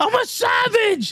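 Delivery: very high, loud holler. Acting out someone yelling up to the top level: acting out a yell. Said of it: "he's just yelling up to the top level".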